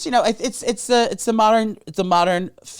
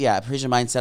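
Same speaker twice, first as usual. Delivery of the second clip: usual speaking voice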